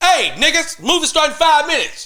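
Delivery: very high, loud, unamplified, projected yell. At a movie premiere, imitating Joey yelling to his people without a mic. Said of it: "he just yelling shit out without the mic".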